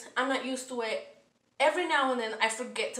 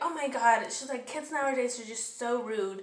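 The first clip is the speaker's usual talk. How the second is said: ordinary delivery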